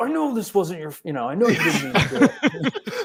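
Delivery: mock very high furious yell through gritted teeth. Retelling a hit batter's reaction to the pitcher, imitating Bryce yelling angrily. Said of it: "yelling, but he was so angry".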